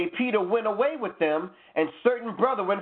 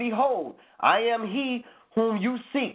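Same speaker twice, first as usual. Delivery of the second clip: ordinary talk, nothing marked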